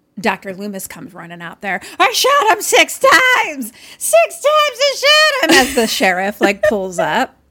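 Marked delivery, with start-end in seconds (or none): 2.0-5.6 very high, slow, drawn-out screaming. Retelling a movie scene, Doctor Loomis shouting at the sheriff: imitating Doctor Loomis yelling. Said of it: "why are you yelling and screaming".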